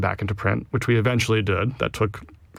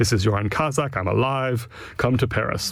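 raspy put-on French accent. Retelling a phone call from Yoren Kazak to the speaker, Yoren Kazak's raspy French accent. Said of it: "It's a raspy French-accented voice".

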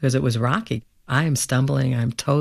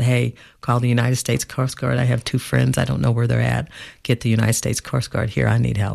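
ordinary talk

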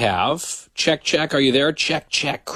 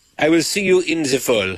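put-on French accent. Teasing another speaker about taking a month off: mock french accent. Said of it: "You're like".

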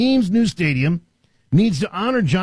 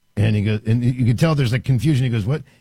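ordinary talk, nothing marked

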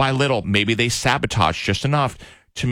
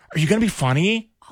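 put-on puppy talk voice, higher pitch; 8 semitones higher than usual. Retelling how a date spoke to him: imitating talking to a puppy. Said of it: "the way you talk to a puppy".

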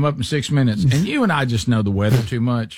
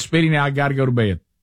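ordinary talk, nothing marked

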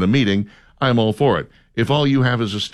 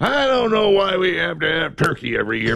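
put-on grumpy grandpa voice, angry, high-pitched, complaining; 6 semitones higher than usual. Imitating a grandpa at Thanksgiving like Joe Biden: imitating angry Joe Biden. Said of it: "to angry right there".

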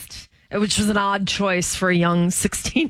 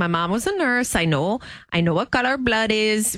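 put-on fake Spanish accent, slower. Speaker quoting Ilaria Baldwin's claim, in Ilaria Baldwin fake Spanish accent. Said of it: "with her fake Spanish accent".

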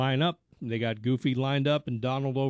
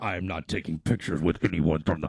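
very low droning voice through a voice box; 7 semitones lower than usual. Retelling Kylo Ren's reply when asked for a picture, in the Kylo Ren voice-box voice. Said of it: "In the Kylo Ren voice. In the little voice box thing".

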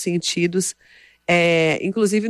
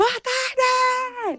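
high, bright-voiced, cheerful shouted call. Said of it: "você vai gritar um boa tarde bem animado".

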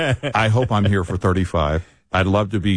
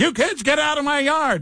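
very high-pitched, nonstop, full-tilt screaming. Joking about cracking the mic instead of giving it up, mock screaming. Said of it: "just keep screaming".

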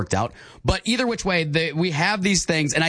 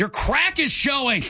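cross, angry reproachful tone, pitched up; 9 semitones higher than usual. Showing a co-player how to say a phrase in an angry tone: angry tone. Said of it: "say it angry".

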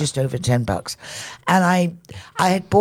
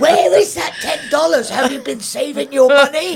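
shrill, very high, loud scolding yell; 10 semitones higher, 5 dB louder than usual. Retelling what was said to the dog, reenacting shouting at it. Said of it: "So then when I stopped shouting".

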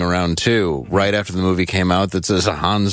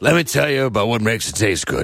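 plain, natural, everyday speaking voice; 3 semitones higher than usual. Imitating Glenn explaining what makes it taste good: Glenn impression. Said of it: "That's his exact, his real voice".

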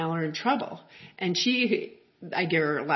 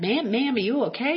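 thick put-on Southern accent, pitched up; 6 semitones higher, 4 dB louder than usual. Retelling what a country boy asked you after you fell, in a deep Southern accent. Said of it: "in this like deep southern accent".

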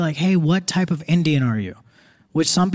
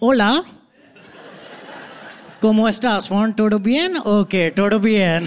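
put-on Spanish spoken in an Indian accent; 3 semitones higher than usual. Retelling how you went around school speaking Spanish in an Indian accent. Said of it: "speaking Spanish in an Indian accent".

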